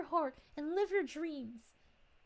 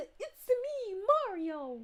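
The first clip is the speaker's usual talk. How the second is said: sweet, cute, cartoonish video-game character voice; 4 semitones higher than usual. Quoting a favourite voice actor's line in that voice: Mario voice. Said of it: "Like that voice".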